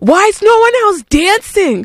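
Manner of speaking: high-pitched yell, belted out. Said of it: "I, like, yelled at her".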